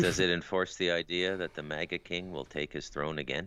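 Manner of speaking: normal talking voice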